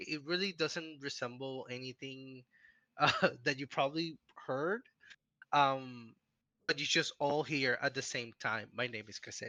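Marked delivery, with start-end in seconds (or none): 8.7-9.5 very flat, even, low, soft, quiet monotone. A character introduces herself by name, Caselia's monotone voice. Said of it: "it kind of sounds like a very monotone voice".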